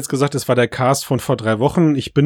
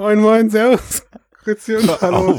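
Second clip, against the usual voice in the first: giggling through words, higher; 8 semitones higher than usual.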